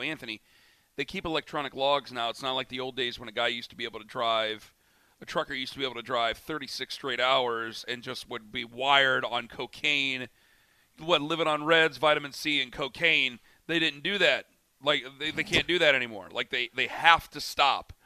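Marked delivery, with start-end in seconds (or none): none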